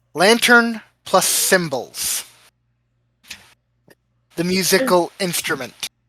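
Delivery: secretive half-whisper, quiet aside. Voicing a character leaning in so only one other hears: half-whispering. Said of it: "whispers so that only Velos will hear".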